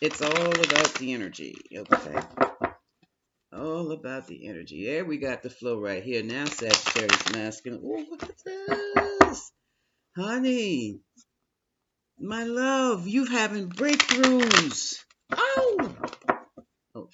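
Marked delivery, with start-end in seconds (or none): 7.8-17.1 thrilled, very high, very slow, swooping excitement. A tarot reader addressing Sagittarius, openly excited. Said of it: "forgive my excitement".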